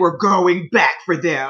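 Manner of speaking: very low-pitched voice, dropped way down. Retelling Kipo's line from the episode: Kipo voice dropped three octaves. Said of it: "her voice dropped, like, three octaves".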